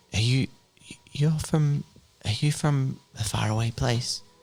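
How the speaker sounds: gentle, high, hesitant, stumbling delivery. Game master voices a figure at a window answering the players' offer of help; soft voice. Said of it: "A soft voice says".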